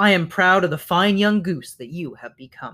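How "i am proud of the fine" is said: plain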